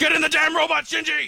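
loud, high-pitched shout. A father to his son Shinji, who asks why he always shouts, shouting. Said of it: "Why are you always shouting at me?".

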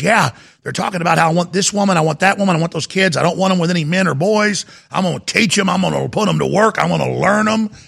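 exaggerated put-on backwoods hillbilly voice. Retelling what a man in Pennsylvania said: imitating a hillbilly voice. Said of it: "I'm not trying to talk like a hillbilly".

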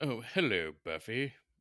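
snooty put-on voice. Greeting someone in a hoity-toity voice. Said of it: "you got that hoity-toity voice".

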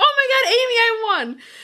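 mock thrilled, high, excited shouting outburst. Retelling getting a text saying they'd won a signed guitar, retelling own shout. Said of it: "shouts like".

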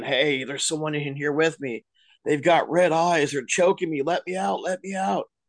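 put-on half-voiced frantic pleading, screaming. Telling a famous story of an inmate locked in cell 14, imitating an inmate screaming. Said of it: "and he was screaming".

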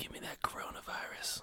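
hushed, breathy, joking whisper. Joking about meeting an infected person, saying the line: mock whisper. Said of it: "I'm gonna whisper".

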